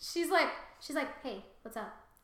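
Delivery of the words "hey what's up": play-acted, light, casual, flirtatious tone. Retelling a scene where a woman greets a man: imitating a flirty tone.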